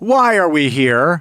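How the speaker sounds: mock stilted, forced, unnatural delivery. Reviewing a film, showing how its lines were delivered, imitating stilted line delivery. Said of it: "Lines were delivered like this".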